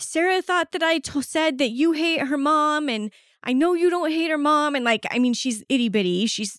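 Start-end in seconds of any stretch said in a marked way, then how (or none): 0.0-4.7 put-on high, sobbing child's voice, talking through tears. Retelling what a sobbing kindergartner said: imitating a sobbing child. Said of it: "just sobbing, just bawling, as she's like".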